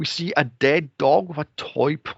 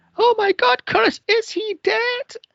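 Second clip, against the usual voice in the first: mock very high, shrieking, drawn-out horror-film panic scream; 3 dB louder than usual. Retelling a movie character screaming at a dead body: imitating her screaming. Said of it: "she's screaming".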